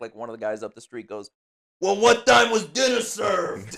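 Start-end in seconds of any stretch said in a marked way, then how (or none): 1.8-3.7 shrill, very loud, high yell from afar. Acting out a neighbor at a crime scene, yelling from the back. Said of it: "yelling from the back".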